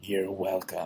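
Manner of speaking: mimicked creepy voice. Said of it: "so creepy".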